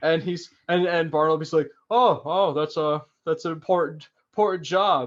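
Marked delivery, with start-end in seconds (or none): 1.9-5.1 mock sarcastic tone, slower. Retelling a character's reply to a man in a suit; retelling a sarcastic remark. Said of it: "like being totally sarcastic".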